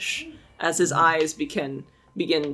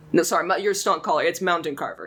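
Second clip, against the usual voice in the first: normal talking voice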